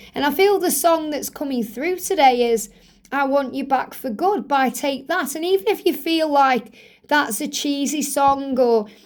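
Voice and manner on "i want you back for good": normal talking voice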